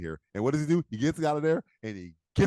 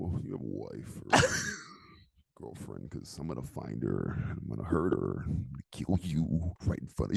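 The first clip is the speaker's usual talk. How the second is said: low, breathy voice kept in the neck; 13 semitones lower, 7 dB quieter than usual. Showing how the villain's line should sound: low voice kept in the neck. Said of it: "you gotta go low, but you gotta keep it in your neck".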